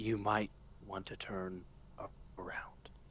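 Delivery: barely-there, very quiet, breathy whisper. Threatening a bandit from behind with a knife: quiet whisper. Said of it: "quiet as I can be, like a little whisper".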